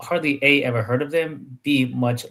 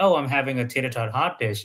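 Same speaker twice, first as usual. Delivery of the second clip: ordinary delivery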